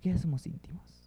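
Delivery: soft, intimate whisper.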